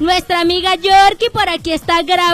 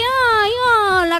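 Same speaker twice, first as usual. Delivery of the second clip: mock listless, half-hearted delivery; 4 semitones higher, 4 dB quieter than usual. Showing how Emmanuel's hello sounded, the speaker imitates Emmanuel's limp hello. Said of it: "Como que no".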